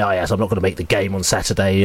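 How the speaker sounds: put-on proud tone. Retelling a fellow fan's words before a key match, mock-proud announcement. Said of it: "announced very proudly".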